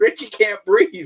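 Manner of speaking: high voice, laughing through the words. Retelling how Robbie's wife reacted on the tape: imitating Erin laughing while talking. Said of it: "she was laughing like".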